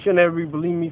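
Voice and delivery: ordinary talk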